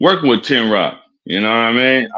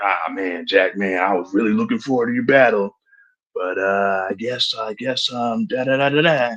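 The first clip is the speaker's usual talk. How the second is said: mock meek soft tone, lower, quieter; 4 semitones lower, 7 dB quieter than usual. Imitating the other speaker's past words: imitating someone sounding soft. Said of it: "you was soft as hell".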